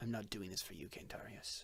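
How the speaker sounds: soft, low, hushed whisper.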